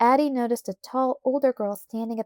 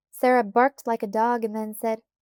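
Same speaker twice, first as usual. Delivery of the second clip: plain reading voice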